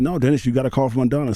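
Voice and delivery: ordinary talk, nothing marked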